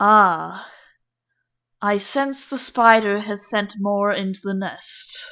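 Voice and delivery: warm, welcoming lioness voice. Game master voicing a lioness who turns to the player, very deep, warm voice. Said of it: "she speaks in a very, very deep, very warm voice".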